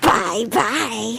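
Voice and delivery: put-on demonic voice. Describing a game sound, the speaker mimics the Call of Duty demonic announcer voice. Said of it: "demonic shrill laugh".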